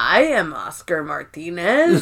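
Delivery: worst-ever put-on, low, swooping Spanish accent. Retelling how a man answered a sandwich delivery, in the worst spanish accent ever. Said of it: "in like the worst Spanish accent ever".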